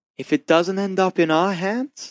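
hushed whisper. A narrator reads a character leaning in close to the listener, whispering. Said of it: "he whispers to you".

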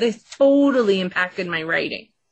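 ordinary talk, nothing marked

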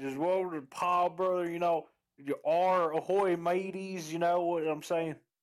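put-on Southern accent. Demonstrating for the co-hosts a stereotypical Southern accent. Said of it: "I'm sorry, the stereotypical Southern accent".

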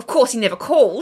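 put-on Australian accent. Retelling a scene from a show's pilot: put-on Australian accent. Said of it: "That is such a good impression".

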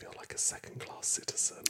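imitated whisper. Retelling how a mother leaned in on a bus: imitating mum whispering. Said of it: "she leaned in and whispered".

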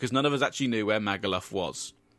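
plain reading voice

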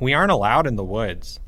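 plain reading voice

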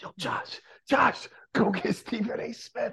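barely voiced, hushed, breathy whisper. Retelling what another speaker whispered while live on air: imitating someone whispering. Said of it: "you're whispering it like".

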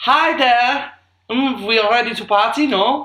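put-on German accent on English speech. Trying out accents, the speaker does an English-speaking German: English-speaking German accent. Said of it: "an English-speaking German".

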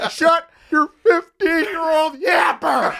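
put-on angry yelling. Doing a Chris Farley yell at a screaming fifteen-year-old: Chris Farley yelling. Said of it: "Can you do Chris Farley yelling at a fifteen-year-old?".

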